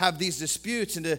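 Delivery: ordinary delivery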